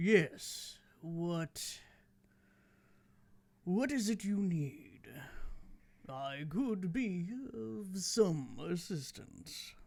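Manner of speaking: soft, very regal, stately voice. Game master voices a crane answering the player Audrey: very regal voice. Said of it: "in a very regal kind of voice".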